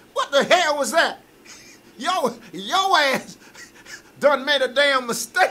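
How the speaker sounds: every word drawn out, very high pitched voice. Doing impressions of comedians for others: Steve Harvey impression. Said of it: "Steve Harvey was good".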